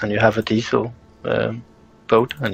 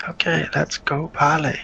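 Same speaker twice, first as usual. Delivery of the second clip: high-pitched, hushed half-whisper; 5 semitones higher than usual. Speaking in character, urging a companion to move on: half-whispering. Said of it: "she whispers".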